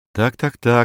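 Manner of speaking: ordinary delivery, nothing marked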